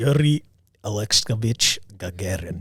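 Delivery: put-on Russian accent. Saying the first astronaut's full name when asked: put-on russian accent. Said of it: "Say it more Russian".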